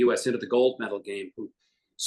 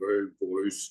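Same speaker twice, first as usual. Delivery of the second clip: put-on old-school radio announcer voice, hailing delivery; 3 semitones lower than usual. Comparing two announcers' voices, imitating Bob Wilson. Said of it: "And when Bob Wilson talks, it's like".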